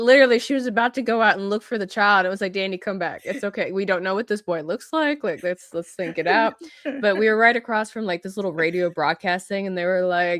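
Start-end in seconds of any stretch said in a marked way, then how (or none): none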